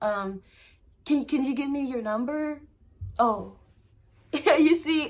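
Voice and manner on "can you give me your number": hesitant, timid, unconfident delivery. Acting out asking for a number with low self-esteem, timid. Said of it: "Say I had low self-esteem".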